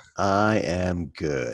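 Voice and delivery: exhausted and tired. Answering a welcome and "how are you" on a monday morning: exhausted. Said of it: "I said that in that way, which really means I'm exhausted".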